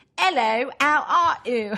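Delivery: put-on British accent, loud, very slow, drawn out. Asked to hear their british accent, speaker greets in a put-on british accent. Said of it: "Let me hear your British accent".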